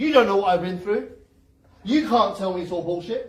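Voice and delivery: loud, indignant, defensive protest. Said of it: "That's gonna be an instant defense mechanism".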